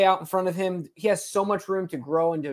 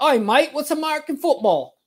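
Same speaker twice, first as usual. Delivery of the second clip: very high-pitched put-on Australian accent; 9 semitones higher, 3 dB louder than usual. Retelling a rugby player's reply to NFL scouts: put-on Australian accent. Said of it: "his accent is relatively mild".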